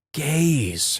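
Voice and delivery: mock hushed whisper. Narrator quoting a woman who ordered her to leave, retelling a whispered 'gays'.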